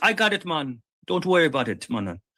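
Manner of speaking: imitated Jamaican accent. Retelling what a man said to him at thirteen, in an imitated jamaican accent.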